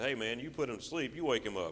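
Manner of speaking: plain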